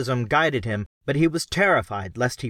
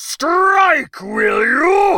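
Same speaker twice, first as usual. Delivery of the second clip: loud angry bellow, very high-pitched, roaring fury; 8 dB louder than usual. Narrator reads a character's line as another character flees, bellowing. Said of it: "Podrang bellowed".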